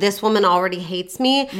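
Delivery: ordinary talk, nothing marked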